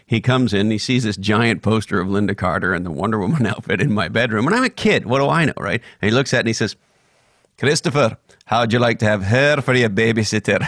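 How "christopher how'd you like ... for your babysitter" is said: put-on old man voice with Scottish accent. Retelling what a grandfather said on seeing a bedroom poster, imitating Jack's Scottish accent. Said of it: "the Scottish accent".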